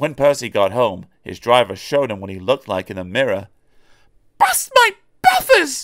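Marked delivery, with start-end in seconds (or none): 4.4-5.8 sharp, very high, pitched-up outburst. Reading a story, the narrator voices Percy seeing himself in the mirror, exclaiming. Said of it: "Exclaimed Percy".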